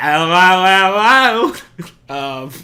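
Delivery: very loud put-on Australian accent, drawn-out hello. Mentioning episode twenty-one's guest, greeting as he would: Connor Rebush's Australian accent. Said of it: "as Connor Rebush would say in Australian accent".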